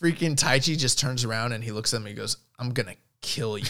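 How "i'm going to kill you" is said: put-on seething, furious tone. Retelling a threat someone said while turning around: imitating a seething threat. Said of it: "he was seething".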